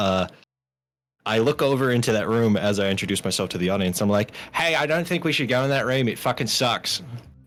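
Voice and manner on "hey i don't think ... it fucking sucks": badly done, put-on Australian accent. Voicing a character who warns against entering a room: terrible australian accent. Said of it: "I have a terrible Australian accent".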